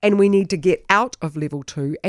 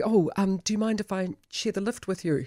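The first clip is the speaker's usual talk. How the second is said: put-on nervous tone, quieter; 6 dB quieter than usual. Retelling what a young woman asked the speaker in the lift, imitating a nervous question. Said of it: "said nervously".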